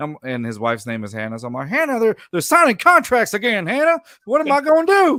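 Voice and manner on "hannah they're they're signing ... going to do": put-on loud, high-pitched, belted Southern accent. Imitating Cal McNair complaining to Hannah: Southern accent Cal McNair voice. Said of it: "Southern accent, uh, Cal McNair voice".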